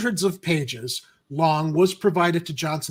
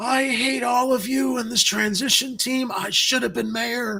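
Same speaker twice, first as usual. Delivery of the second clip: put-on gravelly smoker's rasp, pitched up; 7 semitones higher than usual. Mocking a former mayoral candidate's complaints: imitating someone with a gravelly voice. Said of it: "imitation of someone with a gravelly voice".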